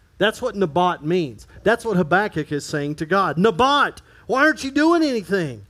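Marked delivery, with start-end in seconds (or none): 3.4-5.5 acted ticked-off, mock-angry tone. Speaker voicing Habakkuk's complaint to God, acting ticked off. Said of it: "say it like you're ticked off".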